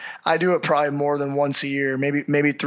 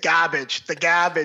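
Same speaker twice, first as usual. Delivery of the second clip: put-on New York accent; 2 semitones higher than usual. Retelling how a guest kept saying a word: imitating Vinny's New York accent. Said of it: "he's a New York guy".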